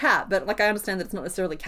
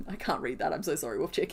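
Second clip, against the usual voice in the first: usual speaking voice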